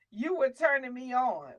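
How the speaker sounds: normal talking voice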